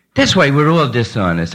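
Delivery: ordinary delivery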